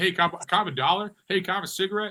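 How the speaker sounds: put-on St. Louis accent. Describing the Saint Louis accent by imitating locals asking for things: imitating a Saint Louis accent. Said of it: "that's the Saint Louis accent".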